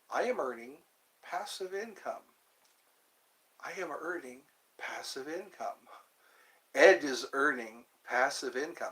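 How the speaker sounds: calm, steady, even chant-like delivery. Demonstrating how to say a mantra aloud, in a calm voice. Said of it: "say it just like that with a calm voice".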